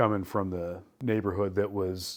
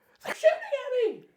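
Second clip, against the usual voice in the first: acted, very high, shrill, panicked, frightened screech. Retelling how a man reacted under fire; retelling a scream. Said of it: "he starts screaming".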